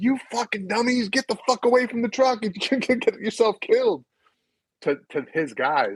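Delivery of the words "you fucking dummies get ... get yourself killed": very high-pitched sergeant-style yell. Retelling how the first sergeant warned his guys away from the truck: retelling a sergeant's yell. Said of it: "the first sergeant started yelling".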